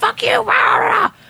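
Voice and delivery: very high-pitched shouted yell. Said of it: "he started screaming in the guy's face".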